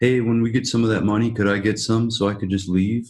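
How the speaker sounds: ordinary delivery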